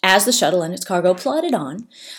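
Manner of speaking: ordinary delivery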